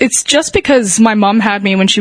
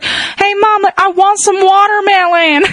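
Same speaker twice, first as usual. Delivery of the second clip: strong Southern twang, very high-pitched; 12 semitones higher than usual. Retelling how someone asked their mom for watermelon, in a strong Southern twang. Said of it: "like in this really weird, strong, ... twang of Southern".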